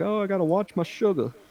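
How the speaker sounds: fussy, prim voice. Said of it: "aunts that I can remember that would drink, like".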